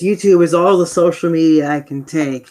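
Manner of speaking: ordinary talk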